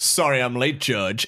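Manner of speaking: put-on smarmy lawyer voice, New York accent. Retelling a courtroom scene, the speaker plays the late-arriving defense lawyer: smarmy New York lawyer impression. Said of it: "This smarmy like New York like top of the range defense lawyer".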